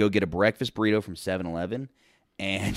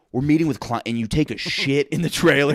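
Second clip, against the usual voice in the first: high-pitched, furious, angry ranting outburst; 5 semitones higher, 4 dB louder than usual. Retelling what the boss said after getting mad: imitating an angry boss. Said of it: "my boss got so mad at me".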